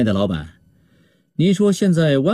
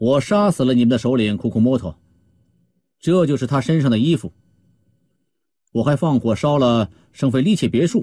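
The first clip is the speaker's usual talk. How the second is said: ordinary delivery, nothing marked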